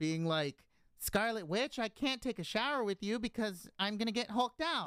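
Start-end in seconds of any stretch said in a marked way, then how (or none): 1.0-4.9 lisping through every s, voice pushed up high. Imagining an actor's line, the speaker does a lispy high Edward Norton voice. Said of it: "with his lispy, high pitched voice like this".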